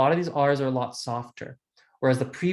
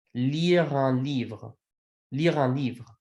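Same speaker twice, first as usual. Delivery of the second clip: very slow, every sound of "lire un livre" drawn out. Teaching pronunciation of a phrase so listeners can hear it, very slow. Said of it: "I'm going to say it as slowly as I can".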